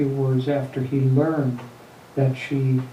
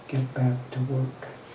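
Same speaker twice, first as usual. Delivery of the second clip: very quiet, softly said, hushed; 7 dB quieter than usual. Retelling a woman's brief words to him, in a very quiet voice. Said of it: "in a very quiet voice".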